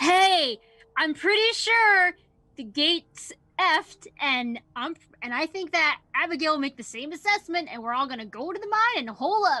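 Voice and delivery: stage whisper loud enough for everyone to hear. A player tries to whisper a warning to the group: loud whisper. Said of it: "that was such a loud whisper".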